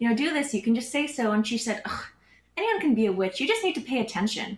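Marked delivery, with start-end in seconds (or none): 1.8-4.6 disgusted, scornful delivery with a swooping tone. Retelling a witch's reply to an offer of help; imitating a disdainful tone. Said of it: "She said that with like disdain in her voice".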